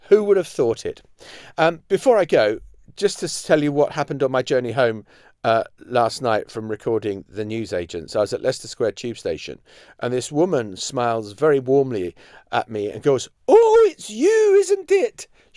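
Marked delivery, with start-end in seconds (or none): 13.4-15.2 put-on very high, slow, appalling Scottish accent. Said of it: "the appalling accent".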